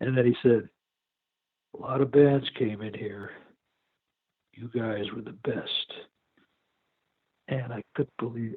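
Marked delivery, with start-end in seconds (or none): 1.8-5.9 slow, methodical, deliberate speech. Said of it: "spoke very slowly and methodically".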